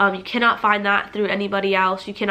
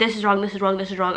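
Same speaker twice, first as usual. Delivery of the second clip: normal talking voice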